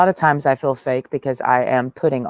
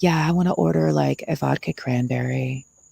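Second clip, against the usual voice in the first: put-on seductive bedroom voice; 2 semitones higher than usual. Mocking how someone talks when ordering at McDonald's, mock seductive voice. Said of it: "sounding like you're trying to seduce us".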